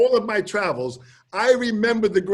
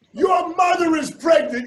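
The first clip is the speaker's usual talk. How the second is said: screaming, higher pitch; 9 semitones higher, 3 dB louder than usual. Retelling screaming to five thousand people: imitating himself screaming. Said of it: "I'm screaming".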